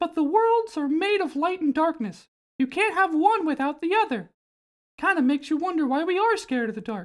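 squeaky, very high cartoon mouse voice. Describing a scene, the speaker acts out what Mickey Mouse says, in Mickey Mouse voice. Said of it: "And Mickey Mouse says".

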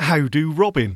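put-on upper-crust posh voice. Greeting Robin in a put-on posh voice. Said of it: "That was my posh voice".

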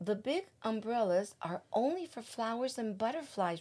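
ordinary delivery

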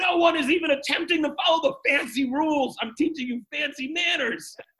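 put-on child's high-pitched, yelled tantrum. A parent retells her five-year-old daughter's tantrum at a fancy dinner, imitating a yelling tantrum. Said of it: "really yelled at us to the point of a tantrum".

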